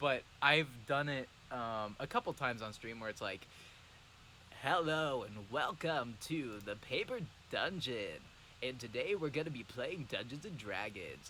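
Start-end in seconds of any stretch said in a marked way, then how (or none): 4.6-11.3 goofy, silly radio host announcer voice with patter. Describing a character voice used a couple times on stream: goofy radio host voice. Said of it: "this radio host character voice ... Like that kind of like goofy voice".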